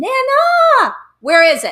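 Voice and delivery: put-on very loud, shrill, swooping four-year-old child's scream. Retelling a four-year-old marching in demanding the book: imitating a child screaming.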